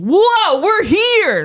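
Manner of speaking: very high, loud, overeager, overexcited cheering burst. Matching the other speaker's cheery opening: put-on overexcitement. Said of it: "I'll match your level".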